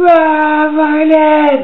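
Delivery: very high, loud panicked scream.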